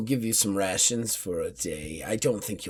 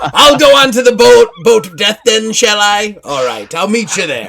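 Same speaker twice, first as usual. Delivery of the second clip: put-on pirate voice, higher and louder; 12 semitones higher, 19 dB louder than usual. Voicing a pirate crew member reluctant to fight: put-on pirate voice.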